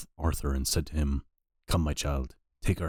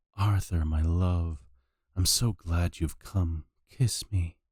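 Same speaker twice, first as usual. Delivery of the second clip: sensuous, dreamy half-asleep voice, slow and voluptuous; 2 semitones higher than usual. Half-waking, a woman opens her eyes and calls to Arthur, in a soft, voluptuous voice. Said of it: "said in a soft, voluptuous voice".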